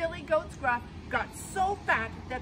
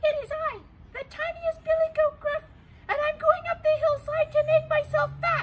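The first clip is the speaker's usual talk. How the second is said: high, small squeaky voice; 7 dB louder than usual. Reading a fairy tale, the tiniest goat answers the troll: Billy Goat Gruff's small voice. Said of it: "said the billy, billy goat in a small voice".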